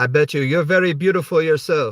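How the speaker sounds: horrible fake Indonesian accent. Replying to the group after thanking them, speak in a horrible indonesian accent. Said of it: "I know that was a horrible accent".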